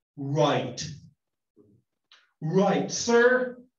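loud, utterly scornful, sarcastic tone. Reading the verse's end line, speaker acts her words with scornful sarcasm. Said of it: "with complete and utter scorn and sarcasm. Perhaps she's saying it this way".

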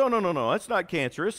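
ordinary delivery

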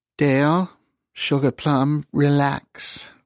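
tender, gentle, coaxing, soothing, very slow. Narrator reads Mabel patting Dale's arm to calm him down, said softly. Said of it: "she said softly".

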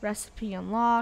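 plain

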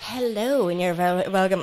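late-night TV channel presenter voice. Opening the podcast with a greeting: like a Babe Station introduction. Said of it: "that sounded like a fucking Babe Station introduction".

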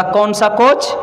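normal talking voice

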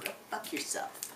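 soft, unvoiced, breathed-out whisper.

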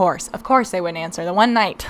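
normal talking voice

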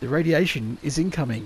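plain

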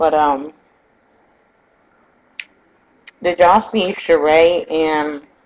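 speaking with mouth full, chewing. Speaker chats to her audience about a show, talking while chewing. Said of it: "Let me stop chewing like that".

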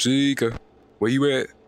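plain

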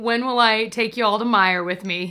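ordinary delivery

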